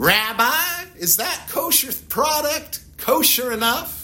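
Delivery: Memphis way of talking. Acting out how people in Memphis asked their rabbi questions: Memphis way of talking. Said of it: "that's how they used to talk in Memphis".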